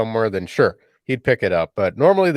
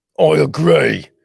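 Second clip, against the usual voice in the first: pirate voice, higher pitch; 5 semitones higher, 4 dB louder than usual. Agreeing after talk of speaking like a pirate all evening: pirate voice. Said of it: "that's the voice".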